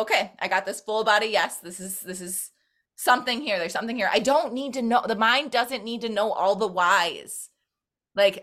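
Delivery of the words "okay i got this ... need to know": ordinary talk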